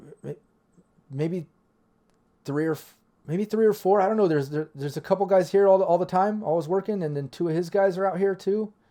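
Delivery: terrified high panicked stutter, half hyperventilating. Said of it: "You can hear him hyperventilating a little bit".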